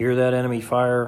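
ordinary delivery, nothing marked

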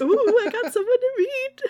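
put-on giddy, excited mom voice. Voicing a mother wiggling with excitement about meeting someone: put-on excited mom voice. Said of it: "she's kinda wiggling a little with excitement".

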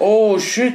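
acted shocked shout. Retelling how someone yelled on seeing a huge spider in the metro, retelling a shocked shout. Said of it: "Así le gritó".

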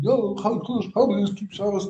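high, loud thundering yell. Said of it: "I started yelling, thundering".

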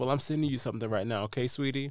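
ordinary talk, nothing marked

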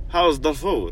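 fake, bad, vague all-purpose European accent. Retelling the words of a man who suddenly showed up: bad European accent. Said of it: "that's just my bad accent".

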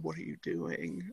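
very quiet, very low under-the-breath mutter. Passing someone at a movie theater, retelling muttering under breath. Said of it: "under my breath".

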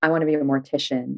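plain

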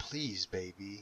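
imploring, begging, pleading. Narrator reads a man trying to comfort a crying woman, pleading. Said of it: "he pleaded".

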